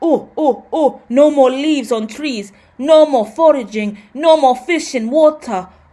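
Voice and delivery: awful, slow, bad put-on caveman accent. Explaining overpopulation, the speaker voices the Neanderthals in an awful Neanderthal accent. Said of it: "awful accent".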